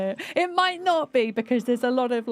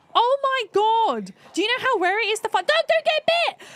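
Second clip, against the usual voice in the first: very high-pitched, thrilled, excited loud yelling; 12 semitones higher than usual. Playing a zombie game on the computer, speaker calls to dirk, shouting excitedly. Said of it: "I'm just shouting at the computer now".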